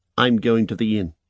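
usual speaking voice

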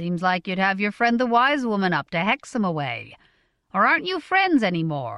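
ordinary delivery

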